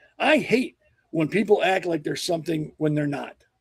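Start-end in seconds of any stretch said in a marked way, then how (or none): none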